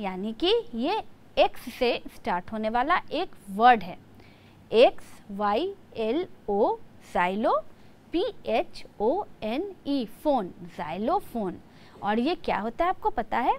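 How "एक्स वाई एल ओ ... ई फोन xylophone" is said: xylophone spelled out slowly, letter by letter. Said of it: "इसका pronunciation होता है xylophone".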